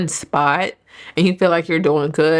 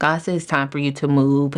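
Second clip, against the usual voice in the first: ordinary talk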